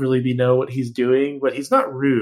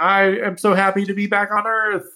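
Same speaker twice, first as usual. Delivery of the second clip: put-on cheerful voice, higher pitch; 8 semitones higher than usual. Comparing dubs, quoting the Robotech version of a line, Robotech character faking delight. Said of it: "like he's pretending to have fun by saying".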